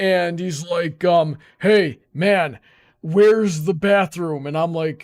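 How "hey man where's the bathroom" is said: put-on drunk man voice. Retelling a meeting outside a bathroom: imitating a drunk man. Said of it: "visibly drunk that he can't even really stand".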